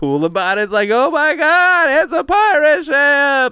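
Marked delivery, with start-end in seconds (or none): 0.9-3.5 very high, loud, long drawn-out exclamatory voice. Retelling own words on seeing a pirate ship: Seinfeld voice. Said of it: "I don't know why it sounded like Seinfeld".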